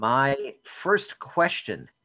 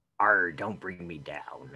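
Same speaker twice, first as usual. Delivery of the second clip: put-on grizzled old sailor voice, much lower; 7 semitones lower than usual. Picturing someone as a pirate with an eye patch, joking in an old grizzled sailor voice. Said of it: "bundled up like an old grizzled sailor".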